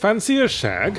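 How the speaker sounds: exaggerated upper-class voice. Describing a casual pose with one elbow on the couch, speaks in the poshest, least self-aware voice. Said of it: "in my uh, poshest and least self-aware voice".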